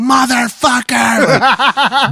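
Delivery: put-on high, slow, drawn-out laughing drunk yell.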